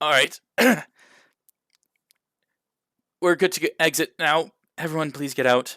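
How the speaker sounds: sour, put-upon, grumpy disgruntled tone. Game narrator voicing a dazed woman poking her head back in, disgruntled voice. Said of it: "all in a gruntled voice".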